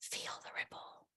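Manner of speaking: very soft, breathy whisper, barely voiced. Showing how to say a phrase about the ripple: whispering. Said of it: "I like to whisper it and I go".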